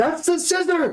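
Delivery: high-pitched calling out. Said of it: "Karshaw calling out".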